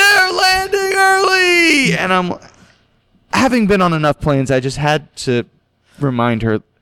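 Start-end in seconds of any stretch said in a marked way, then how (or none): 0.0-1.9 mock very high shriek, early part drawn out. Retelling how a friend came up behind, imitating someone screaming.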